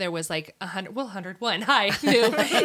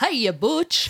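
thick, put-on Italian accent; 3 semitones higher than usual. Retelling how the speaker's sister greeted the family's old cat: Italian accent. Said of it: "in an Italian accent".

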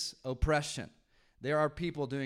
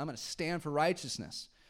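normal talking voice

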